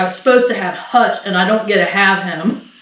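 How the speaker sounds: ordinary talk, nothing marked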